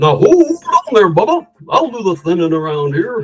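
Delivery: high, put-on cartoon character voice. Recalling a voice once used in business meetings: put-on cartoon voice. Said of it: "I used to do this voice sometimes in, in business meetings".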